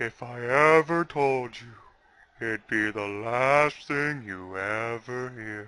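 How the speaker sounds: put-on creepy tone. Recalling a man's answer when asked his real name, retelling a creepy threat. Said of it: "he had that creepy moment".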